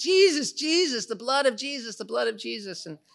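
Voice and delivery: put-on yelling. Retelling a group of people on a mountain: imitating people yelling. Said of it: "just yelling".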